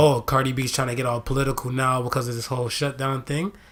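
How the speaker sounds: usual speaking voice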